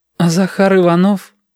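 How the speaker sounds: quavering voice. Asking about another student's exam result, trembling voice. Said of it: "Сашкин голос дрогнул".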